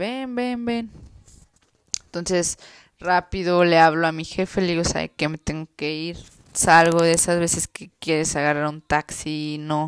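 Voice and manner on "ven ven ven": play-acted, urgent, high-pitched voice through tears. Retelling what a man whose mother had just died said, imitating someone crying. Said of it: "él llorando me dice".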